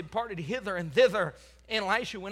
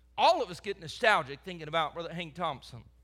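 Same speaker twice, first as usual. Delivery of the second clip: plain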